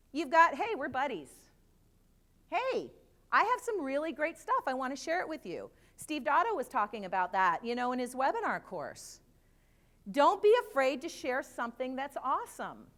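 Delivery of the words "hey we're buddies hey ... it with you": confident, friendly, higher, brighter buddy-buddy pitch. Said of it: "you don't have tentativeness and fear in your voice".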